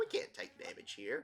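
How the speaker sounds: normal talking voice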